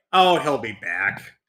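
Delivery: cartoonish old master character voice. Acting out a calm reply about the villain: Splinter voice. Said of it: "Splinter's like".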